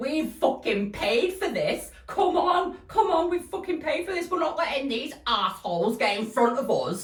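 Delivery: put-on very high, insistent London accent. Retelling what a stranger from london said, in an attempted london accent. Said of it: "I'm gonna try and do the accent".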